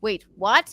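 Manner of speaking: loud, startled, alarmed, anxious outburst. Retelling the phone call again: retelling own anxious panic. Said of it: "my anxiety brain goes".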